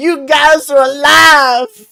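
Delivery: overjoyed shriek, very high and very loud. Game narrator voicing Ophelia as she pulls two friends into a hug, Ophelia screaming. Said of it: "just screaming".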